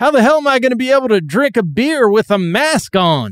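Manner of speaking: play-acted derisive, very high-pitched, shrill ridiculing tone. The speaker reads aloud the slogan on a drink koozie, ridiculing tone. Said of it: "saying it in such a ridiculing tone".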